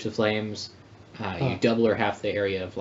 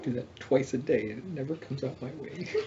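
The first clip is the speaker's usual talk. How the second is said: mock, soft, very pouty sulking voice; 4 semitones higher, 6 dB quieter than usual. Retelling what he said after getting one use of the wish spell, in a mock-pouty voice. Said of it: "he says in a very pouty voice".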